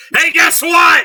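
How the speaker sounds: loud, high-pitched shriek. Acting out a midnight knock on the door, call out in your best Gilbert Gottfried voice. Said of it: "my best Gilbert Gottfried voice".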